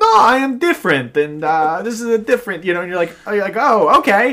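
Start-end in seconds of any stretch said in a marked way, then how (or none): 0.0-2.6 put-on German accent, pitched much higher. Imagining a guest opening the door at a weird party, David Cross doing German accent. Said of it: "doing a German accent".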